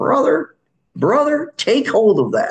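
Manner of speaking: high, loud scratchy voice. Recalling Chet Sanders, met years ago at a Bible chapel, quoting him: Chet Sanders' scratchy voice. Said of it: "he had a scratchy voice".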